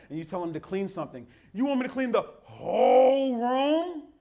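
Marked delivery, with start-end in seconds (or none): 1.5-4.0 put-on drawn-out, high, slow, sarcastic childish whine. Imitating a child told to clean something: imitating a sarcastic child. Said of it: "speak in sarcastic language".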